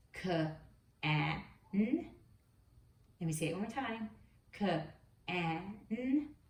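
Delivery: slow, each sound sounded out separately. Leading listeners in a word-blending exercise: sounding out slowly. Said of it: "say some words very slowly".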